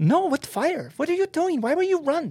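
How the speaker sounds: put-on cute little very high French-accented voice. Retell her reply when you asked about the fire, in Annie's cute little French voice. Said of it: "Annie's a little cute little French voice".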